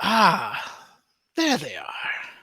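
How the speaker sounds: put-on feminine voice. Game master voices a character calling from the stairwell to the players, feminine voice. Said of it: "You hear a feminine voice come from the stairwell".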